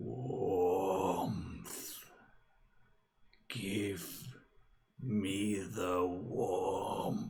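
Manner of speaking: eerie, deep, rumbling, ethereal voice of the dead. Game master voicing a frozen dwarf's corpse turning toward the player, deep, rumbling, ethereal voice. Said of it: "this sort of ethereal, deep, rumbling voice".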